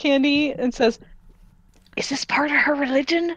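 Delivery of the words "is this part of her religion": sly, confiding sidelong aside. A tiny character half-whispers a question to Candy: half-whispering. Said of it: "whispers to you".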